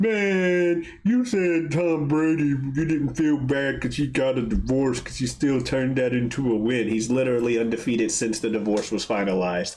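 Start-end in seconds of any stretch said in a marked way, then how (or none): 0.0-6.9 grumbling, complaining, drawn-out man voice. Imitating fans who complain about a comment on tom brady: imitating complaining fans. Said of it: "were doing the impression of those fans".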